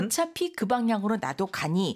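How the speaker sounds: normal talking voice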